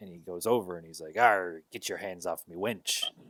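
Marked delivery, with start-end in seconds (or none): 1.2-3.0 imitated pirate voice. Retelling a show scene where a character who is a pirate speaks: imitating a pirate voice. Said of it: "He is a pirate".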